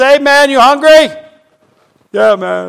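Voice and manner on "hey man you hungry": mock high yell as if calling across a distance. Retelling how he called out his car window to a man, retelling a yell. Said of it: "I rolled down the window and I yelled over".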